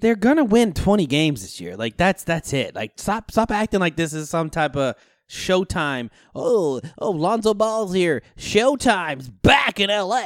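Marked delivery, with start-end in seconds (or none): 6.3-10.3 mock sports announcer voice, higher and slower. Mocking TV hype about the Lakers, in a sports announcer voice. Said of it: "I love your announcer voice".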